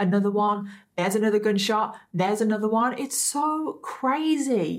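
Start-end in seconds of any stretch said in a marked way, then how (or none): none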